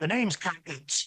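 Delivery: rasping, slightly high voice. A narrator voices a stranger introducing himself at a table: Cankins' raspy voice. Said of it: "he rasps".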